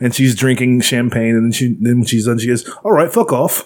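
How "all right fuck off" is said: pitched-up, put-on Australian accent. Retelling a movie scene where Margot Robbie signs off: Margot Robbie Australian accent. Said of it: "'Cause apparently she's Australian".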